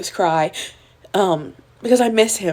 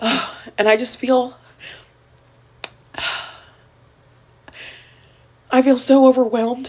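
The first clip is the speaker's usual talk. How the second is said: tearful, higher-pitched voice, crying while talking; 5 semitones higher than usual. Talking about the last two years as a mom: crying while talking. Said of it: "I'm not crying because I'm sad".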